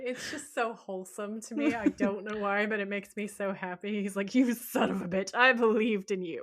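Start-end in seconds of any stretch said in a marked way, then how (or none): 4.3-6.4 acted full-on rage, furious outburst, raised voice. Retelling a scene where Dean calls God a son of a bitch: imitating Dean in a rage. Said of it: "He has a rage moment".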